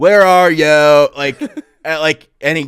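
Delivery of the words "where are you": put-on Delaware County accent. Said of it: "Delco style".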